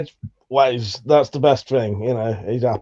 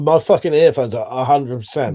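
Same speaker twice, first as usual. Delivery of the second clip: normal talking voice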